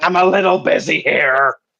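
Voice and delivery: put-on pirate captain voice. Voicing a character busy mixing a potion: Barbossa voice. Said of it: "almost like a Barbossa voice".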